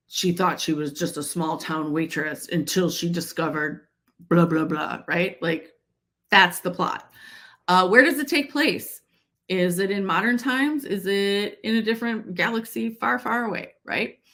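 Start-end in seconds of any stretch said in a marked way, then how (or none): 0.1-5.0 very deep movie-trailer announcer voice. Explaining how to sum up a story's plot, the speaker mimics a deep deep voice dude. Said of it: "that deep, deep voice dude that you hear".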